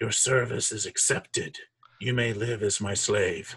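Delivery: eerie, hollow, echoing sepulchral voice. Voicing an ancient corpse answering the party, in an echoing sepulchral voice. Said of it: "that this kind of weird echoing sepulcher voice echoes out of the mouth".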